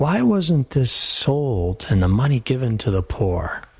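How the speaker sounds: ordinary delivery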